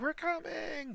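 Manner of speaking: far-off, very high call. Voicing distant guards answering the alarm, distant cries. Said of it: "distant cries of".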